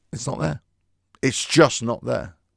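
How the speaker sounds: ordinary delivery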